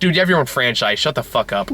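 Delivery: ordinary talk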